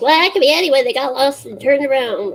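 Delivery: annoying voice, high and loud.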